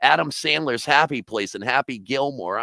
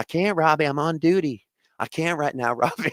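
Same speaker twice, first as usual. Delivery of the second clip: put-on sweet soft Southern accent, higher; 3 semitones higher than usual. Retelling what a police officer on duty told him: imitating a sweet little southern accent. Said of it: "she had a sweet little Southern accent".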